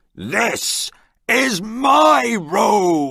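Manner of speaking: high, very slow pirate shout, my stretched long. Reading a story aloud, voicing the pirate claiming his room: shouting. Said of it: "the pirate shouts".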